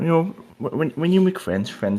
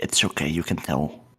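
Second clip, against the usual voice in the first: soft, hushed, under-the-breath whisper; 4 semitones lower, 4 dB quieter than usual. A player voicing his character during a hug in a tabletop game, whispering. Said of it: "he whispers".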